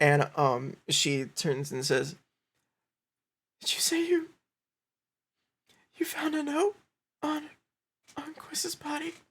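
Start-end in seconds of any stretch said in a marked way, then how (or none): 3.6-9.1 very high, trembling, shaking, halting, breaking-up voice. Storyteller voicing a woman who turns to the players, in a shaking voice. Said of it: "And she's like shaking".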